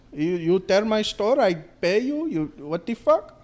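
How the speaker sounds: accent from the Middle East. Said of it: "Better than mine".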